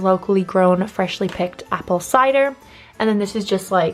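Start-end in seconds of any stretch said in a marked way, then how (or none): none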